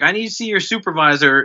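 acted, demanding, insistent half-shouted pleading tone, mild yell. Retelling a video of a player tased by cops: imitating Malik McDowell shouting. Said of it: "And he's shouting, like".

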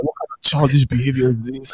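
put-on angry voice. Retelling a listener's complaint about mocking his name: imitating an angry listener. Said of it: "Noble was fucking pissed off".

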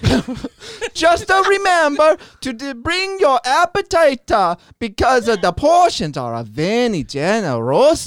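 mock Italian accent.

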